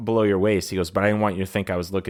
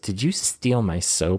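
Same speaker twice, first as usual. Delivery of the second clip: imitated slight lisp. Retelling what a man in the shower asked: imitating a slight lisp. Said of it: "got a little lisp going".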